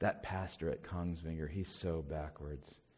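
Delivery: mock whispered murmuring. Retelling the murmurings people start about a pastor, in a hushed murmur. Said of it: "hushed murmurings".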